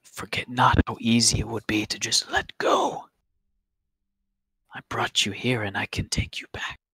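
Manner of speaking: soft, hushed, sinking whisper. Voicing a character threatening a player after damage: whisper. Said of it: "the whisper almost descends all the way right into your head".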